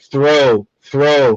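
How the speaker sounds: plain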